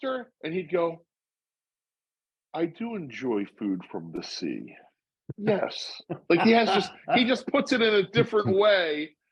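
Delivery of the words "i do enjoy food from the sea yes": slow, drawn-out, self-important sing-song phrasing. Imitating how Joe answers questions, slower and self-important. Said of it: "he says it a little slower and answers it a little different to, to maybe to, like, sound a little more important".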